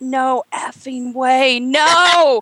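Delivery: put-on tearful yelling. Recalling watching a fight and yelling at the screen, retelling a yell. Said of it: "looked at the screen and yelled out".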